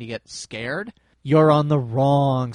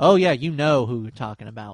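resentful, grudging voice. Talking about a former store manager, grudging tone. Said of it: "You cannot hear the grudge in my voice".

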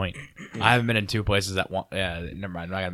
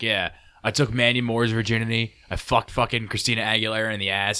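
usual speaking voice

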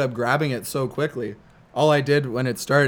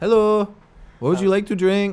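put-on high-pitched Mexican bartender voice with Mexican accent; 7 semitones higher, 3 dB louder than usual. Retelling a vacation story, imitating a Mexican bartender: imitating a Mexican bartender. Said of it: "completely authentic Mexican dudes".

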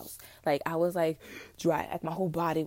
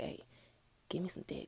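put-on sleepy mumble, whispered, very quiet; 13 dB quieter than usual. Retelling waking up and asking a partner for sex: imitating half-asleep talking. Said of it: "half asleep talking".

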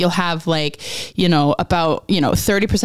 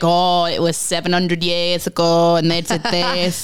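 convincing put-on Yorkshire accent. Retelling what people there say about old history, in a put-on yorkshire accent. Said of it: "that's a good Yorkshire accent".

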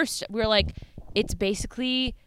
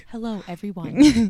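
mock serious, stiff, robotic formal tone, louder; 6 dB louder than usual. Pretending the podcast hosts are overly serious: mock serious robotic voice. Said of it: "Imagine if we were that serious".

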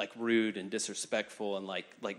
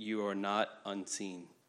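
put-on very quiet, soft voice. Retelling what someone said with his head against hers, imitating someone saying it real quietly. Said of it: "he just said real quietly".

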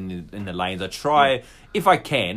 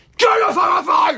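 furious angry shout, higher and louder; 8 dB louder than usual. Retelling yelling at a driver through the car window: retelling a furious yell. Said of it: "it was just pure rage".

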